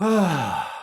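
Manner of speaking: sighing breath out. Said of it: "Everybody just go".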